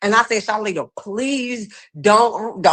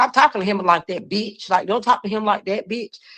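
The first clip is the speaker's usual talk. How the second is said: ordinary talk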